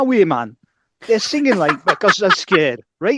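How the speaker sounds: loud, high-pitched voice. Redoing the quote on request: Chris Waddle doing Bobby Robson. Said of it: "I'll do Chris Waddle doing an impression of Bobby Robson".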